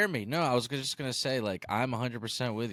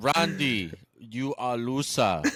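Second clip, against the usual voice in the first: very slow, deliberate, drawn-out put-on Austrian accent. Quoting what was said to Randy: Arnold Austrian accent. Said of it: "he's he's working on his Arnold Austrian accent".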